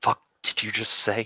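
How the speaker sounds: through clenched teeth. In a roleplay scene, a character responds to what was just said, through gritted teeth. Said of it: "she just through gritted teeth".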